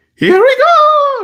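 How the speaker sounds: very high, cartoonish put-on cartoon voice. Doing another catchphrase of the character: Mario voice. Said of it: "what else does he say?".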